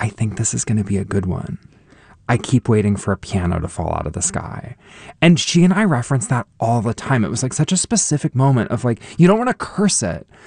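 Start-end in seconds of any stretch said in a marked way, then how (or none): 0.0-4.8 mock murmur, muttered quietly under the breath. Recalling what the original Louise said in the elevator, retelling it under breath. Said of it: "under her breath".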